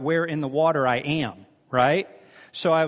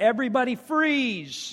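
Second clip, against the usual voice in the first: mock sudden, raised, high-pitched shout; 8 semitones higher than usual. Retelling suddenly popping up out of the water: imitating own past shout. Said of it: "I shouted".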